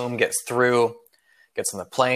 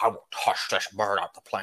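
put-on scottish movie star voice, quieter; 2 semitones lower, 6 dB quieter than usual. Acting out the captain threatening the bird: Sean Connery voice. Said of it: "Sean Connery voice".

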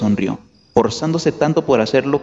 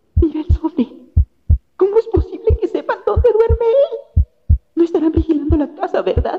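very high-pitched, quavering, trembling voice. Aunt Petunia speaks to Uncle Vernon about the envelope: trembling voice. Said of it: "Decía tía Petunia con voz temblorosa".

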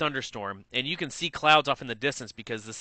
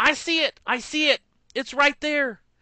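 mock very high, shrieking scream; 12 semitones higher, 4 dB louder than usual. Retelling a passenger screaming that she sees a tornado: imitating someone screaming. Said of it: "She screams".

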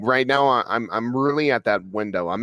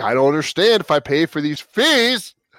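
put-on angry yelling, higher pitched; 5 semitones higher, 4 dB louder than usual. Retelling a call to the internet company: imitating own angry yelling. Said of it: "Straight up yelling".

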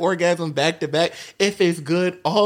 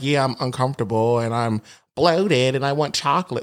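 mock condescending tone, lower; 5 semitones lower than usual. Imitating some girls describing their periods: imitating someone condescendingly. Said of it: "that sounds very condescending".

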